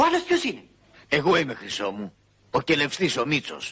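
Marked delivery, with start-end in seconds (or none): 1.1-3.7 deep bass voice, pitched much lower. A petty officer introduces himself to someone who asked who he is; deep bass voice. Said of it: "(με μπάσα φωνή)".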